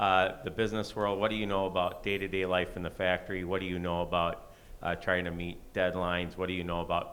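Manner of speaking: plain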